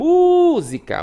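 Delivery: first syllable mu in música drawn out and stressed. Teaching how to find the stressed syllable by calling the word: drawn-out mu in música. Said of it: "O mu demora mais".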